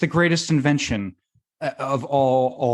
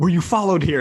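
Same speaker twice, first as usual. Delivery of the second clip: put-on scared, frightened man voice, higher-pitched; 4 semitones higher, 3 dB louder than usual. Retelling a video where a guy has his friend come over: imitating a scared guy. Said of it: "all scared".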